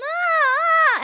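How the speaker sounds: high, loud "ah" siren vocal exercise.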